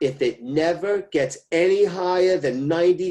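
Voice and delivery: slow, high-pitched mother voice.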